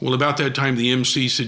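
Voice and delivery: ordinary talk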